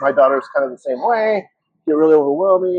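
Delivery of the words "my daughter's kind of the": plain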